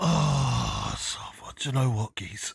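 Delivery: put-on hoarse throat voice. Acting out a phone call to get out of a party: fake sore-throat voice. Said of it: "you can hear it in my voice".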